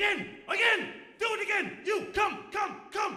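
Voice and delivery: mock shrill, very high screaming. Retelling a coin trick, a man calls his friends: imitating a man screaming. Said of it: "He starts screaming for all of his friends".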